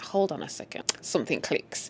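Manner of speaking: soft, low, suspicious hush.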